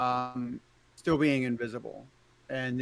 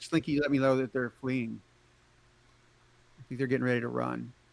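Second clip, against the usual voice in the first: whispered voice. Whispering into a companion's ear during the game, whispering. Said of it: "I'm gonna whisper in Ignatius's ear".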